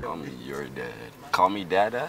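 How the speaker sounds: put-on deep voice. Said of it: "Why is your voice so goddamn deep?".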